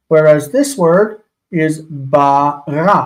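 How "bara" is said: slow bara, final syllable stressed. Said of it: "with the stress on the end".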